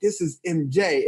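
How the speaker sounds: ordinary delivery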